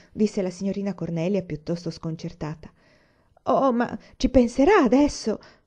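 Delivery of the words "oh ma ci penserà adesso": earnest, begging, slow and raised imploring voice. One woman answers the taken-aback lady, pleading. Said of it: "La implorò una".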